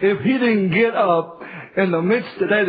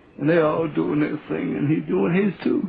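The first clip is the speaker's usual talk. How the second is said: normal talking voice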